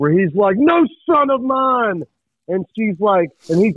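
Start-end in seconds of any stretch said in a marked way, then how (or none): 0.6-2.0 mock very slow, angry, high-pitched delivery. Imagining a scene twenty years ahead: imitating an angry Paul Whittington. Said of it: "An angry Paul Whittington".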